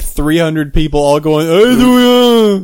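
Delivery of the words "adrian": put-on mumbling movie tough-guy voice, higher and louder. Imagining three hundred people at a convention yelling together: Stallone impression. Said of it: "doing a Stallone impression".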